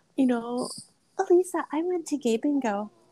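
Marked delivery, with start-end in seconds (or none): 1.2-2.9 mock sugary, sweet, high little voice. Quoting someone unexpected telling Alisa news, imitating a sweet voice. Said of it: "in the sweetest voice too".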